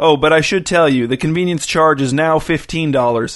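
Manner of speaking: ordinary delivery, nothing marked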